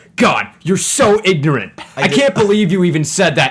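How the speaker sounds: acted, deeply affronted, indignant tone. Doing an impression of Kyle's response to the speaker's question, imitating Kyle's offended reply. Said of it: "my impression of your response to me".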